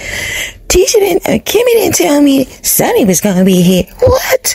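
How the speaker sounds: mock phony innocent surprise, very high and swooping. Mocking a reality show cast member's confessional line: imitating Tisha's fake surprise. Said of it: "That was so fake".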